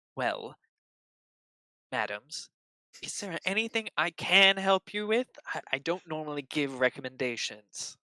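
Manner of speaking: shy, self-conscious, bashful, embarrassed politeness. In a story, a blushing character speaks to the madams, bashful and blushing. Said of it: "a blush on his cheeks as he says".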